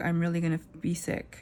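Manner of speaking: usual speaking voice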